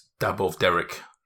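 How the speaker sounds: normal talking voice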